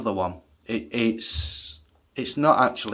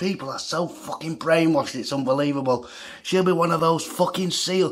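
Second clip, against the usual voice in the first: high, raised, loud shouting; 6 semitones higher than usual. Retelling shouting at some lads so a woman still hears: retelling own shouting. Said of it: "I'm shouting at these lads now".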